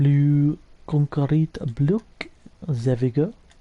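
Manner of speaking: slow, funny, comic put-on French accent. Speaker narrating what they are doing, in a funny french accent. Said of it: "Don't know why I'm speaking in a funny French accent".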